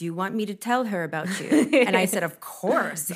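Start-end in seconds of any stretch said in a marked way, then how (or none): 0.0-1.5 put-on speaking with Bulgarian accent. Quoting an older esthetician at HSN, in her Bulgarian accent. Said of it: "she would say with her accent and everything".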